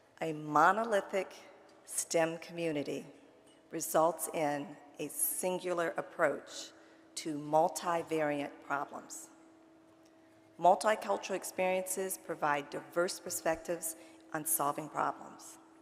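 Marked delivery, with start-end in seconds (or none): 0.2-9.3 each word drawn out slowly and carefully. Repeating a key sentence to an audience for emphasis: slowly. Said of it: "I'm gonna say that again slowly".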